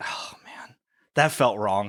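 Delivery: mock sad, self-reproaching tone. Retelling a story scene, voicing the man's reaction, mock sad self-reproach. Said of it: "Like he's just sad with himself".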